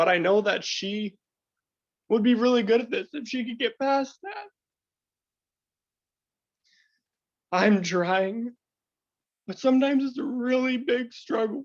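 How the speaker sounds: very high, weepy, tearful crying speech. A man talking about his wife's anxiety and his struggle, crying. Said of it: "That's probably why I'm crying".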